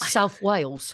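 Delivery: put-on British accent. Retelling slipping into an accent saying a place name, Michael Caine British accent. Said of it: "some sort of uh, British accent ... I sounded like Michael Caine".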